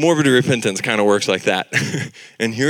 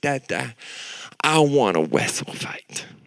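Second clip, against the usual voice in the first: exaggerated little-kid baby talk voice; 6 dB quieter than usual. A father retelling what his four-year-old daughter said to him, imitating Bri's baby talk. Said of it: "baby talked way more than she needed to".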